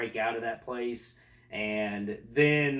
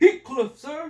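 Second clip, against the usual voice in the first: high, loud recruit-style shout. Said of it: "recruit answers drill sergeant".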